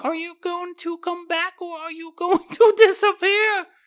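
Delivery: put-on very high-pitched babyish voice. Retelling a story, the speaker voices Grandpa questioning the mom in a baby voice. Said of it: "He's also has a baby voice".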